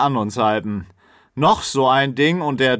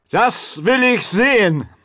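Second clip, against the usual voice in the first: put-on high drunken voice, slurring the words together; 8 semitones higher than usual. A narrator reads a drunk character's line as he heads for the door, drunk, slurred speech. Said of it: "lallte Grell".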